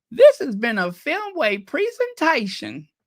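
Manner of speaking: very thick, high country twang. Retelling a woman's final words just before her last breath: strong country twang. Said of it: "she said in her most country twang possible".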